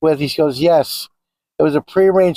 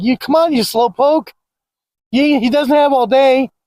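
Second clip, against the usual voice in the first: put-on yelling, higher pitch; 8 semitones higher than usual. Retelling a father calling him up the sidewalk, imitating a father yelling. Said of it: "yelling at me".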